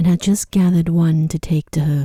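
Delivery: plain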